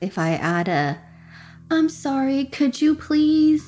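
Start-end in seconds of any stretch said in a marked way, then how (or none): 1.7-3.7 gentler, politer, eased-in tone. Demonstrating how she phrases a request, with a little softer voice. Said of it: "so with a little softer voice".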